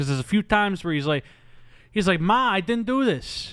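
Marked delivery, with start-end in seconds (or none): 2.2-3.5 very slow, pitched-up, drawn-out put-on Brooklyn accent. Imitating an actor's dodgy movie accent: imitating a Brooklyn accent. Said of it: "a Brooklyn accent".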